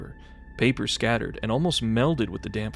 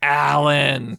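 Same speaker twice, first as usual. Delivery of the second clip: booming, very loud, drawn-out raptor-like cry; 4 semitones higher, 8 dB louder than usual. Recalling a film scene where a raptor speaks with a human voice: imitating a talking velociraptor. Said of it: "there's a velociraptor there, and he's just like".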